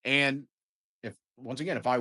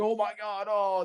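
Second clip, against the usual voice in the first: high, mock panicked gasp. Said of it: "I would be freaking out like".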